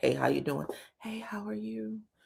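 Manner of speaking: very quiet, real soft whispered voice. Storyteller recounts a man going round hugging people in a room: retelling a real soft greeting. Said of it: "Real soft voice".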